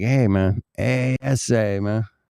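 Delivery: put-on Southwestern US Spanish-inflected English accent. Retelling how friends from California greeted: imitating Chicano friends. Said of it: "so I grew up with that".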